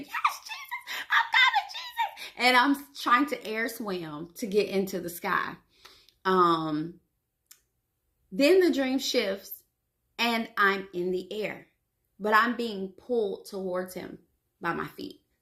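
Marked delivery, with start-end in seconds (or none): 0.0-2.3 very high-pitched screaming cry. Retelling a dream of being called up to Jesus: imitating own screaming. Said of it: "I'm already screaming".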